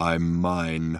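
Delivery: metallic robot voice. Narrating a story, the robot answers from the crater in a thin metallic voice. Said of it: "came a thin metallic voice from the crater".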